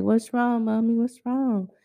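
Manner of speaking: anxious, worried, concerned, quick delivery. A mother retells her son asking what's wrong, imitating a concerned son. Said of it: "My son all concerned".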